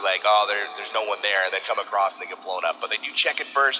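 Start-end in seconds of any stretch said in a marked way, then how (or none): none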